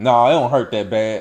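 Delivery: ordinary talk, nothing marked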